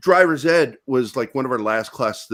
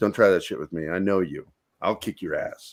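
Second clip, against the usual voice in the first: hushed whispering voice; 7 semitones lower, 5 dB quieter than usual. Retelling a warning once whispered to a friend: imitating own whisper. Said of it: "I whispered to him".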